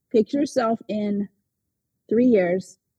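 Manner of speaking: ordinary talk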